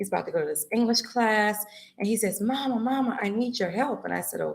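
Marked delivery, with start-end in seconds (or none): 2.4-4.1 panicked tone, quieter. Retelling a phone call from a son: imitating a panicking son. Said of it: "just panicking".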